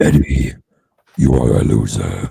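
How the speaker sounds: put-on alien monster voice. Leaning over a friend's shoulder to tease them, doing a Tom Hardy Venom impression. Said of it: "I'll just lean over over their shoulder and just go".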